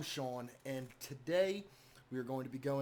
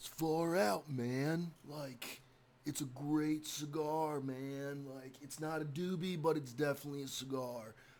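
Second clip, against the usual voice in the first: drawn out very slowly and clumsily. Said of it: "that was a really bad impression of [name] and [name], but or at least [name]".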